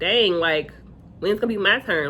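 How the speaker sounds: ordinary delivery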